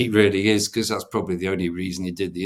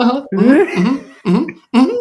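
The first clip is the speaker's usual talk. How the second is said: very loud, voice leaping up an octave, very high; 10 dB louder than usual. Act out Moyes pretending he can take criticism of his team's stats, Moyes voice going up an octave. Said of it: "it goes up an octave".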